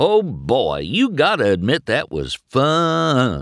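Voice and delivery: cheerful, happy, sing-song and slow, "fun" drawn out. Narrator reads a character's line to another character: happy. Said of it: "Mater said happily".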